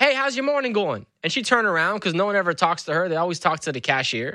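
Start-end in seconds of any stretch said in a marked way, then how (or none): 0.0-1.0 high shout carrying across a room. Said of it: "I shouted to the lady".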